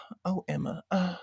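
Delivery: high-pitched, whiny, breathy voice. Retelling how the mother in the series talks: imitating a whiny, breathy mom. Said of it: "She's kinda whiny and kind of, like, breathy".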